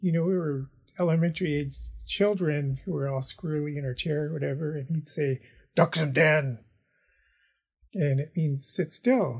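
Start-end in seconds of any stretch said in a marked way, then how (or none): 5.7-6.6 put-on big booming teacher voice, louder. Recalling your childhood language teacher's command, in his big booming teacher voice. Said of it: "his big booming teacher voice".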